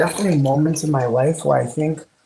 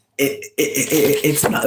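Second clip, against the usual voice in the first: stuttering, stammering speech. Talking about colorism, getting stuck on one word: stuttering. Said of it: "I don't know why I'm stuttering like that".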